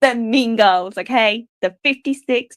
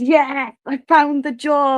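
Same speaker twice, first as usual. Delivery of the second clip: mock overjoyed, beaming, drawn-out ecstatic cheer; 3 semitones higher than usual. Retelling own reaction on a live stream to finding the job: imitating own ecstatic cheer. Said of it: "I was absolutely ecstatic".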